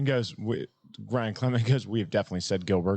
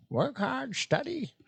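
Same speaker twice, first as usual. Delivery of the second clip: put-on old hermit master voice. Doing a voice the speaker has been working on: Master Roshi voice. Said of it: "Master Roshi".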